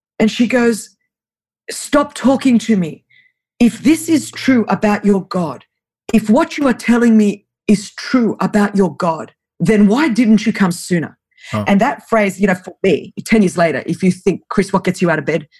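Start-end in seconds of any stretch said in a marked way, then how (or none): 1.7-11.2 put-on heavy Russian accent, laid on thick. Retelling what a woman said to him in broken greek, thick russian accent. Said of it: "with a thick Russian accent".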